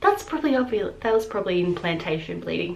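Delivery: ordinary talk, nothing marked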